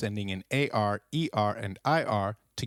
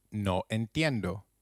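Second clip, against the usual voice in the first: normal talking voice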